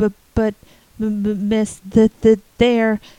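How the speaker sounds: gasping in desperation. Joe answers Anne's command, gasping in desperation. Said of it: "gasped Joe in desperation".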